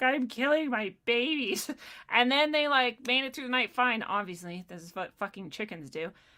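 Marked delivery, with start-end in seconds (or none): 0.0-1.7 put-on near-crying voice, much slower. Retelling putting the chickens in a pen overnight, acting out near-crying. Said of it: "I'm like practically crying".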